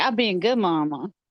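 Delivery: talking dog voice, motherly. Answering for the mother dog after greeting her: voicing the mother dog. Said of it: "She's like".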